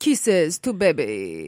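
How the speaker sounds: put-on loud, swooping old-world European accent. Imitating how the baby talks, in an old-fashioned European Lothario accent. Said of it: "sounds like an old-fashioned European Lothario".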